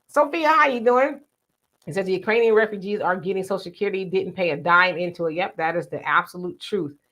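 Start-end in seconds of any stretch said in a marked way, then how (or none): none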